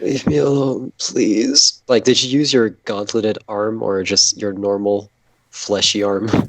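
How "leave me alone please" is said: groaning in pain. Answering a booming goodnight after being woken: pained groaning. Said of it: "It's just very pained, groaning".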